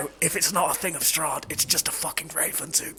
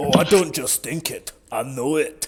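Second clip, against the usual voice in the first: loud, taunting, put-on Scottish accent in dwarf voice; 6 dB louder than usual. In a tabletop game, a player speaks in character, mocking the dwarf's voice. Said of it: "making fun of the fucking dwarf's voice".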